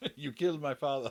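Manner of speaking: put-on Spanish accent. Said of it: "leaning quite heavily into, um, The Princess Bride".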